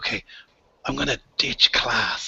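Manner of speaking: conspiratorial, secretive whisper. Voicing a kid telling the others a plan: conspiratorial whisper. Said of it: "whispering, like, real conspiratorially".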